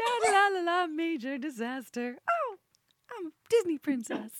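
acted, gushing, overjoyed high sing-song chirp. Imitating a cohost cheerily mentioning a major disaster: imitating Christina's overly joyful voice. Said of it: "too much joy in her voice when speaking of fatal incidents".

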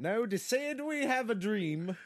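Swedish accent, loud and drawn out. Taking up a challenge to do a voice: Swedish Martin Luther King impression. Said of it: "Swedish Martin Luther King".

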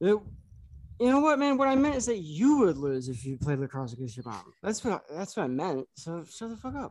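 put-on cartoon drunk, careful, fumbling, struggling for words. Showing how to sound drunk by struggling to get the words together. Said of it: "The best way to sound drunk is act like you're trying to get your words together".

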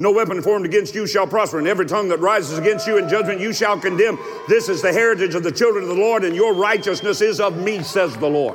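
very fast, rushed reading. A speaker reads a scripture verse aloud, reading as fast as possible. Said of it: "I'm going to read this as fast as I can".

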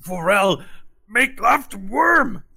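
very high-pitched character voice. Voicing Bok Bok giving orders to the party: Bok Bok character voice. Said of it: "He's like".

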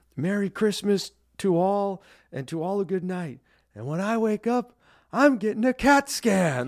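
shouted line. Retelling a favorite movie line while flying the sleigh: imitating Tim Allen's Santa shouting. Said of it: "he shouts out".

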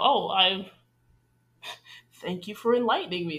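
put-on sarcastic thanks tone. Discussing a show, quoting a character's reply to being confronted, retelling a sarcastic remark. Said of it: "we think that was it was sort of sarcastic".

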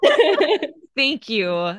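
high, loud teary laugh. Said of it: "Now I'm tearing up".

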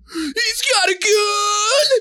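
very high, very slow yell with 'gun' stretched. Recalling a movie scene for the others: imitating Nick Cage yell. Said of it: "That traditional Nick Cage yell".

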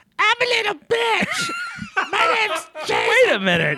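very high, shrill, squeaky teasing voice. Asked to do an impression of the other speaker: impression of the other speaker. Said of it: "do an impression of me".

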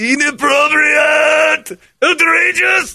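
put-on Japanese accent. After the announcement representing Japan, the speaker responds in a put-on Japanese accent. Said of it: "the word outrageous with a Japanese accent".

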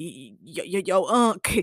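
very slow, drawn-out, halting, stumbling stammer. Retelling a show scene where a character clutches his chest: imitating Franklin stammering. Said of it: "he grabbing his chest like".

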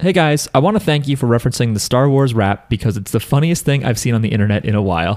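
ordinary talk, nothing marked

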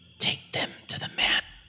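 soft, hushed whisper under the breath. Narrating a game scene, a character on tiptoe speaks to another character, whispering. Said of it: "you kind of hear her whisper".

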